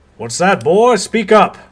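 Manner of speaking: towering man's boom, very loud, very high bellow. Voicing a man in his fifties addressing a boy, in a booming voice. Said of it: "and his voice booms".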